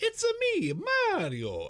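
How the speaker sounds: very high, loud voice with swooping, swinging pitch. Acting out an imagined movie scene with the character on screen: Mario voice. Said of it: "on screen and he's like".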